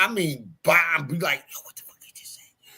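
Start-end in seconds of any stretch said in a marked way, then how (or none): 1.5-2.4 barely audible whisper with a challenging, demanding tone. Retelling how his mother caught him whispering: imitating his mother. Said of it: "I will hear this lady".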